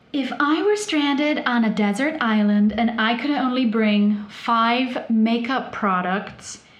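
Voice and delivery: slow, put-on American accent. Repeating a phrase the way she first heard it, in an american accent. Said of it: "I have to do it in an American accent because that's how I heard it".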